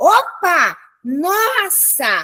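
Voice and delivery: sudden, frightened, startled, swooping exclamation. Teaching how intonation shows fright, with a startled intonation. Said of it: "assustada, eu vou também usar uma entonação de susto".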